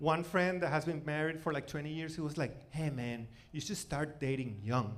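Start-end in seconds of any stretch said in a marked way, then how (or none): 2.7-5.0 put-on, low, very creepy, unsettling delivery. Retelling a long-married friend's random advice: imitating a creepy tone. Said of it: "He said it in like a very creepy tone".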